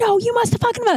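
shrill, enraged, furious screaming. Retelling a hotel guest's rant at a worker: imitating a guest screaming. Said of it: "and screaming".

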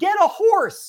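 high, loud, jeering yell. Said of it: "they would yell".

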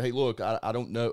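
ordinary talk

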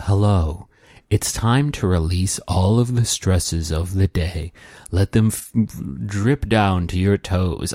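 deep, gentle, soothing hypnotist-style narrator voice. Describing a sleep app where a gentleman talks you to sleep: Pzizz deep, wonderful voice. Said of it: "a gentleman with a deep, wonderful voice would talk to you".

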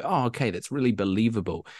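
normal talking voice

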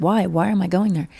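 put-on crying voice. Retelling a boy being pulled away to a hospital: imitating someone crying. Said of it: "he's crying and he's like".

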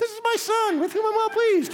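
very squeaky, high, nasal voice pinched through nose. Joking about how God's voice from heaven might sound: high nasally God voice. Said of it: "high and nasally".

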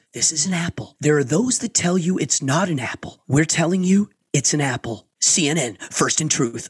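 put-on commercial announcer voice. Retelling a TV commercial, imitating CNN commercial voiceover. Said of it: "And the voice goes".

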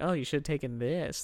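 mock smug condescending tone. Imitating a smug person telling someone they should have taken this: imitating a smug told-you-so tone. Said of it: "the smug smile you say".

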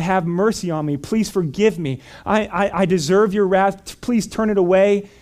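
reenacted, acted crying out. Retelling his prayer after someone shared the gospel with him, crying out to god. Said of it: "I just cried out to God".

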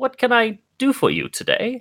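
put-on very high, squeaky, swooping elderly mouse voice. Voicing an elderly mouse folk greeting visitors: elderly mouse folk voice. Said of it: "this elderly mouse folk".

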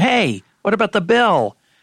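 high, loud calling-out yell. A narrator reads a waitress calling after a man walking out; yelled. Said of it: "The waitress yelled after him".

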